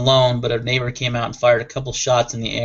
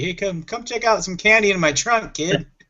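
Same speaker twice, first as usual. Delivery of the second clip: high, shady, creepy put-on voice; 8 semitones higher than usual. Joking that handing out candy from a car trunk sounds creepy: put-on creepy voice. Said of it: "that does sound a little creepy".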